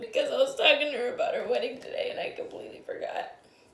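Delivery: crying, tearful speech. Explaining why, after opening a gift box, crying while talking. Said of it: "are you crying?".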